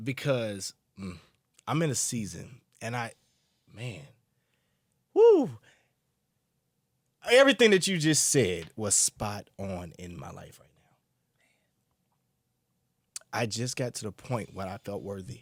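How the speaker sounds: holding back tears. Telling the other speaker their words hit home, holding back tears. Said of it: "Me too".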